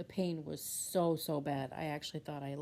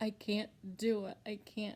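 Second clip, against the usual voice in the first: high, tearful voice, crying through tears; 5 semitones higher than usual. Retelling a phone call to a son: retelling own crying. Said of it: "I'm just crying my eyes out".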